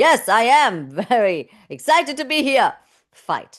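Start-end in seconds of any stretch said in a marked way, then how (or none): 0.0-2.7 aggressive, confrontational, loud and slow, in-your-face. Demonstrating a fight response on stage to an audience, aggressive in-your-face delivery. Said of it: "speaking quite aggressively".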